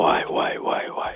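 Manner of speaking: exasperated, unvoiced whispered groan.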